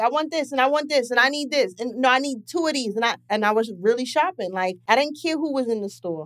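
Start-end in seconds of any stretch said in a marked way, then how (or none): 0.0-3.0 put-on loud voice, higher. Retelling their past self shopping in a store, acting out being loud. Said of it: "And then I would be loud".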